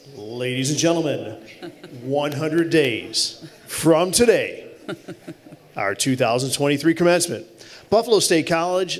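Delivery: announcer-style proclaiming voice. Announcing the commencement date to the meeting, in an announcer's voice. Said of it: "give you my announcer's voice".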